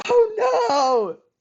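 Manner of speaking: piercing high shriek at full volume. Retelling a favorite clip where a caster screams: imitating Daddy screaming. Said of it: "he just screams".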